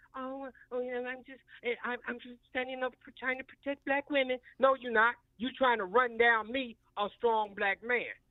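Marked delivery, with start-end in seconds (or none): 0.1-4.3 mocking, put-on soft, smooth-talking voice. Speaker mocking a person who said reckless things about him: mimicking a soft, smooth voice. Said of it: "tried to do it with that soft, smooth voice".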